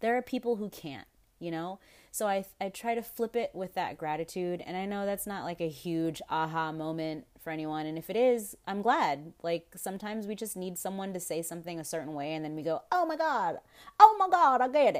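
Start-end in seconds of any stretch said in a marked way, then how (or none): 12.9-15.0 put-on high-pitched, loud country accent. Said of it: "why you have a country accent".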